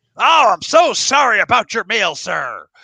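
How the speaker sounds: very high, loud, shrill, exaggerated fake American accent, hard R's. Showing the accent they were going for, a Monty Python-style American accent. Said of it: "the way Monty Python portrayed Americans".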